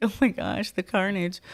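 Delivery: mock-distraught crying. Retelling how they reacted to seeing another fight, imitating own crying. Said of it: "I'm just crying like".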